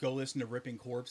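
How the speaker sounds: ordinary talk, nothing marked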